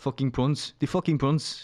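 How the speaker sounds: fake, put-on South African accent. Speaker trying out accents one after another, doing a south african accent. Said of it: "That's that's how I do a South African accent".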